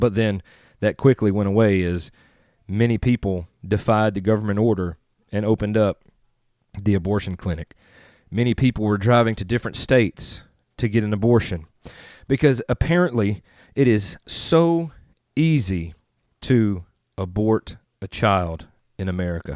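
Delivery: ordinary delivery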